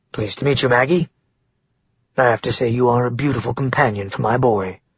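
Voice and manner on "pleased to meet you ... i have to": ordinary delivery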